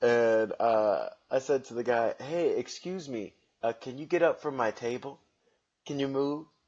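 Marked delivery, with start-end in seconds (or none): 2.2-6.4 put-on polite, courteous voice.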